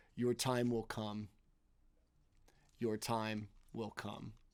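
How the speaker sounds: deep, otherworldly cosmic voice. Voicing the cosmos answering the yell at Illithrax, in a deep voice from the cosmos. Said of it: "deep voice off from the cosmos".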